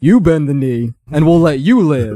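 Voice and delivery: loud bellowing shout. A character walks out in front of the other ranks and speaks, bellowing. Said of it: "And he bellows".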